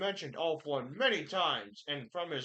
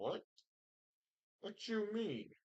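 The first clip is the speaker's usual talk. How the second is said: soft, high, puzzled and baffled tone; 5 semitones higher, 8 dB quieter than usual. Roleplaying a character who is very confused right now: very confused. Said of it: "So he's very confused right now".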